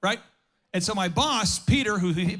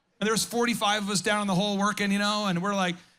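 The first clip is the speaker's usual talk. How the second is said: normal talking voice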